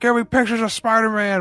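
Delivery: put-on shouting newspaper boss voice. Comparing a loud police commissioner to a comic boss: J. Jonah Jameson voice. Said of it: "he plays it like J. Jonah Jameson".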